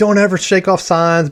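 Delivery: mock angry scolding. Retelling his coach after he shook off signs, retelling a coach yelling. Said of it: "So he's like yelling".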